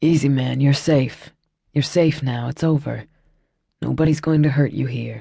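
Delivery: low, calm, settling voice. One man speaks to another who has just grabbed someone: low, calm voice. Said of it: "Shane said in a low, calm voice".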